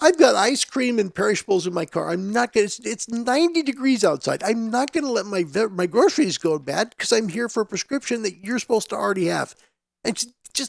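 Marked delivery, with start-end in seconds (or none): none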